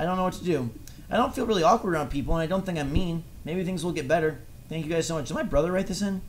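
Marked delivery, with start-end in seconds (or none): none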